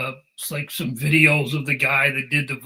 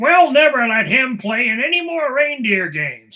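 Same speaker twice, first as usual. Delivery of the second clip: very high, loud, swooping cartoon voice; 10 semitones higher, 5 dB louder than usual. Recalling a voice actor's distinctive voice, quoting the character Donner: Donner voice impression. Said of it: "the guy who did J. Jonah Jameson's voice did the voice of uh, of Donner, who's like".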